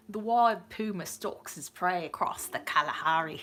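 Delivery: put-on Australian-accented English. Rereading a submitted line aloud, in an Australian accent. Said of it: "we need to say this in an Australian accent".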